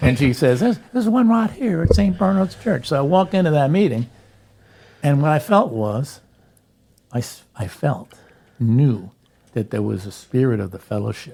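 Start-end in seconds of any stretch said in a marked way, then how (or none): 0.6-2.9 very high-pitched speaking voice. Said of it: "but she talked just like this".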